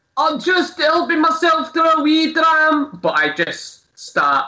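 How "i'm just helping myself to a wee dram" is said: very high-pitched, quite loud, announcing tone. Speaking in character while looting bottles from a cabinet: said quite loudly. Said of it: "quite loudly, uh, say".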